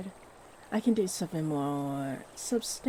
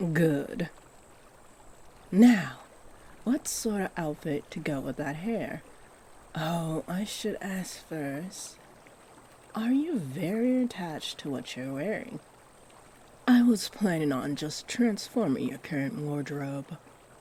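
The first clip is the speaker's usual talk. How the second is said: calm, comforting, gentle, soothing voice. A stylist, having just redone the listener's hair, asks about an outfit; soothing, gentle voice. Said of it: "You have no idea how to get back to the forest path, but you can hear a stream, as well as a soothing, gentle voice".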